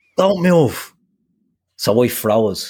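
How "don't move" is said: shouted male voice. Retelling a guard shouting a warning as a dog charged: imitating a shout. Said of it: "he shouts at me".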